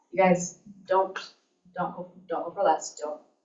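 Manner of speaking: normal talking voice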